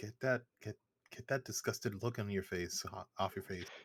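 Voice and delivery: whispered under the breath, as an aside. Playing a character in the game, the speaker whispers to a fellow character. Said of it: "I whisper to Alexander".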